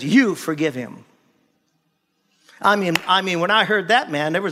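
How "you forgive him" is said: put-on stern, unyielding, firm, direct tone. Retelling words God spoke during a drive: imitating a firm command. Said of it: "he said it very firmly".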